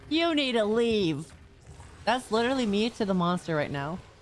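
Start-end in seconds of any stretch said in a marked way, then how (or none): 0.1-1.2 mock emphatic, meme-style yelling girl voice. Quoting a meme while a monster camps her: imitating a yelling meme girl. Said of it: "and she's yelling".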